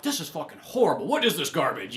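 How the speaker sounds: usual speaking voice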